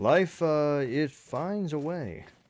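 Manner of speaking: very slow, drawn-out, stretched delivery. Showing another speaker how to say the line: Jeff Goldblum voice. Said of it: "Can you say it like Jeff Goldblum?".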